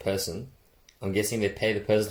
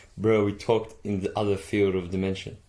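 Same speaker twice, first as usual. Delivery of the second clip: ordinary talk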